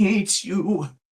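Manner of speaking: very high voice quivering and shaking with fury. Retelling a man so mad his voice shook, imitating his furious shaking voice. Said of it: "he was so mad at me off the jump that his voice was shaking".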